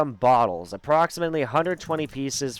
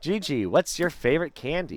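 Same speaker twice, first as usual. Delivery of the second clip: ordinary delivery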